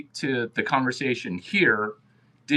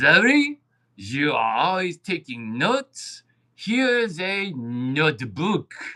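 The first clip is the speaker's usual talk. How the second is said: put-on French accent, drawn out; 3 semitones higher than usual. Retelling what a French man said when handing over a notebook gift, French accent impression. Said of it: "That's my best French accent".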